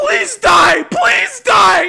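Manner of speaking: shrieking screech, very high-pitched and very loud. Retelling how a character's voice actor delivers a line: imitating a screech. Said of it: "fucking screeching and going".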